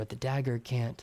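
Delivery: plain reading voice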